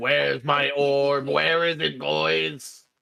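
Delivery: put-on very slow, rough, droning robot voice, "boys" stretched. Voicing a robot character demanding his orb: robot voice. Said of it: "the robot guy walks back in being like".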